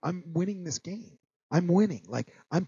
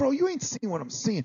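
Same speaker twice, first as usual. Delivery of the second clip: sharp, angry snap with a raised pitch; 7 semitones higher than usual. Retelling how they answered a player rushing them: retelling snapping at someone. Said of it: "but now I snap".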